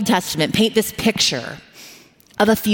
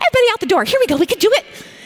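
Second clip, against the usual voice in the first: forced, cheery, pitched-up cheerful tone; 13 semitones higher than usual. Retelling rushed winter mornings getting everyone out, the speaker uses a put-on cheerful parent voice. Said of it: "I'm trying to have my like cheerful parent voice".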